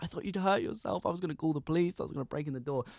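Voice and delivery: play-acted hysterical sobbing outburst. Retelling how a mum turned up at the flat: imitating someone crying in hysterics. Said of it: "in hysterics, like, crying".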